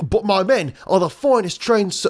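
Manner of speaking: put-on high Australian-sounding accent. Reading aloud a character's excuse to the king: Australian-sounding accent. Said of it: "that sounds Australian".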